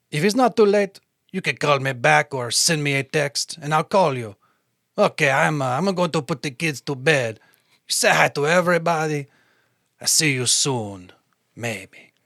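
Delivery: put-on, fake French accent. Reading a voicemail aloud for another speaker who asked: put-on French accent. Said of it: "if you wanna use your French accent".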